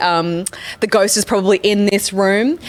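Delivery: plain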